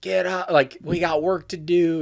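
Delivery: barking drill sergeant voice. Recalling how he woke them at five thirty, doing a drill sergeant voice. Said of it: "doing this drill sergeant voice".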